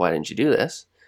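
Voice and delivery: ordinary talk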